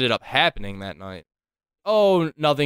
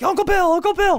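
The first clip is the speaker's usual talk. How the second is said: put-on, very high-pitched calling-out yell; 4 dB louder than usual. Retelling calling back to uncle bill while running away, retelling a yell. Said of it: "I'm like yelling".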